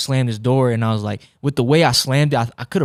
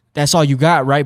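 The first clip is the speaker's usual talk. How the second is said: put-on tone full of attitude; 2 semitones higher, 4 dB louder than usual. Quoting what the listener once said, mimicking an attitude tone. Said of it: "you said it in such a tone".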